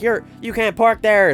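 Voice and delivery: high, slow yelling.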